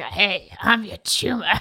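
slow, heavy, raspy chain smoker's voice. Imagining how a tumor's voice would sound: real smoker's voice. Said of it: "had a real smoker's voice and it's like".

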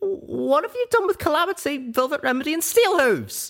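scared, frightened, very high-pitched voice. Narrator reading a character's urgent demand, in a frightened voice. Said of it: "I demanded in a frightened voice".

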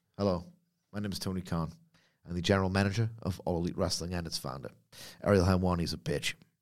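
very quiet, low, hushed, quick, serious, dignified deadpan. Imagine Tony Khan making an important wrestling announcement, in a deadpan, serious, dignified Tony Khan imitation. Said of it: "almost deadpan, full, serious, dignified".

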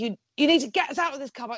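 imitated furious yell. Retelling how a punter in the car park yelled: imitating an angry punter yelling. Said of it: "flipping out at her and being like".

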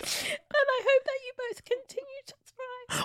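very high, soft voice, weeping through the words. Speaking to the podcast's two hosts, crying while talking. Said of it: "Why is it so high-pitched? She's crying".

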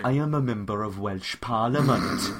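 low, put-on, spot-on Welsh accent. Asked whether he picked up a Welsh accent, answering in a Welsh accent. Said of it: "Did you pick up a Welsh accent".

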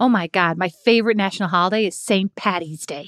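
put-on everyday American accent. Asked to use st. patty's day in a sentence: imitated american accent. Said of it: "put that in a sentence with an American accent".

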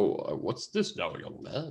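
slow, breathy, comforting voice. Imitating an actor playing Father Christmas: Tom Hanks as Father Christmas. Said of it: "He's just like".

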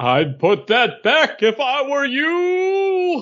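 very high, swooping dramatic voice, "you" drawn out. Giving a dramatic reading of a comic panel, the speaker uses a Rocketeer voice. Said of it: "That's your Rocketeer voice?".

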